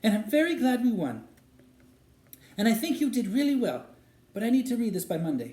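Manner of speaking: odd, unnatural-sounding, strangely high-pitched voice. Not looking up from her book, she answers him in a strangely high-pitched voice. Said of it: "in a strangely high-pitched voice".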